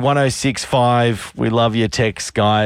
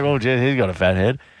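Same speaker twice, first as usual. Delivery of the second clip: plain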